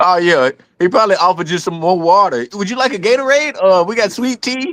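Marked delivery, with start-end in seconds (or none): 2.5-4.7 timid, deferential, meek, pitched-up voice. Imitating him offering drinks after he turned meek: imitating a meek person. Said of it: "he turned into the most meek person ever".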